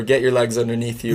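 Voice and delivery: ordinary talk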